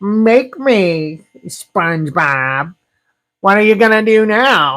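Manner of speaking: high, put-on cartoon voice. Voicing Squidward talking back to SpongeBob: Squidward voice. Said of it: "I don't know if that was a good Squidward".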